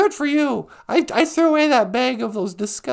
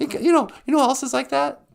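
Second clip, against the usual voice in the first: ordinary talk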